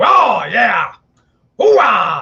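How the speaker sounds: loud, booming, belted-out exclamation. Showing how an actor started talking in every movie: Al Pacino impression. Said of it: "He started talking like this in every movie".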